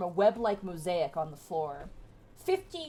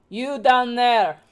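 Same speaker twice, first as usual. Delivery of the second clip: put-on very loud, Russian-style accent; 4 semitones higher, 11 dB louder than usual. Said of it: "Drow accent is just basically Russian".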